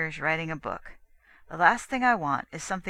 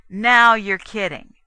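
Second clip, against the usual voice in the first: accusing, much louder, higher pitch; 3 semitones higher, 10 dB louder than usual. Narrator reads a man answering a woman's question, accusing. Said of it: "he accused Faye".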